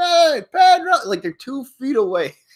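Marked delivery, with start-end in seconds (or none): 0.0-0.9 put-on high, loud children's yelling. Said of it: "They're all just yelling and screaming for nothing".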